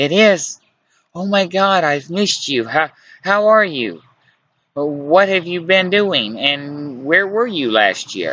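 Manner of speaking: breathless, eager outpouring, panting and high. Reading her reply on the phone after hearing it's him: excited and panting. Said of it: "She said with excitement and panting in her breath".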